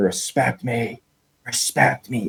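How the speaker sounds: mild, slow, drawn-out yell. Fan retelling a ballplayer walking off the field, retelling a player's screaming. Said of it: "He starts screaming".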